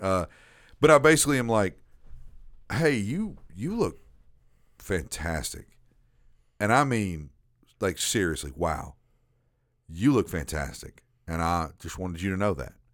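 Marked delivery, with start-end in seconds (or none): 2.7-12.5 heartfelt, earnest, straight-up sincere tone. Retelling complimenting her to another speaker: imitating own sincere compliment. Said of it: "I said it just like that".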